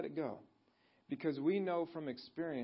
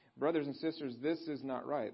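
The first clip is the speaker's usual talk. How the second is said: usual speaking voice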